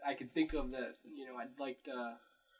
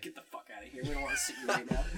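blunt, dismissive, curt delivery; 3 semitones higher than usual. Speaker jokes about how his supervisor will react when he visits work; imitating the supervisor. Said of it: "supervised man will just be like".

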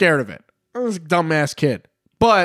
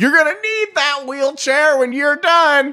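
mock, shrill, very high-pitched holler; 10 semitones higher than usual. Retelling what a neighbor shouted at the kids: imitating a neighbor yelling. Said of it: "a neighbor yelled at us".

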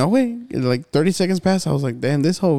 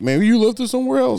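mock dripping sarcasm, pitched-up delivery; 5 semitones higher than usual. Retelling what a police officer said: imitating a sarcastic remark. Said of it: "he said it, like, very sarcastically".

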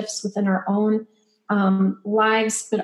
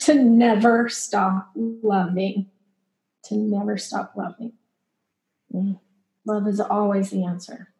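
voice choking with emotion, choked up. Answering what advice to give their younger self, choked up. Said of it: "I'm getting choked up".

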